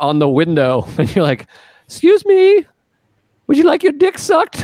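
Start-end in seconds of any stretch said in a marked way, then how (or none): 1.8-4.6 bad put-on lady voice, way up high. Telling a story about a trucker at a rest stop, someone knocks on his window: bad Mary Poppins lady voice. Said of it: "I'm not good with lady voices".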